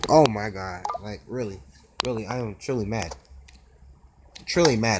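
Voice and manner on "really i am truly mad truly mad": stiff, machine-like, flat robotic monotone. Reacting while playing a game that made them mad: sounding like a robot. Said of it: "I sound like a robot when I said that".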